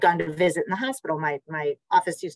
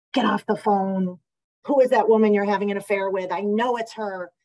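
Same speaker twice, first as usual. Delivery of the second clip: mock frantic, jealous screaming, toned down and held in; 4 semitones higher than usual. Recalling a new mother heard behind her husband's phone call, imitating someone screaming. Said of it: "she was screaming".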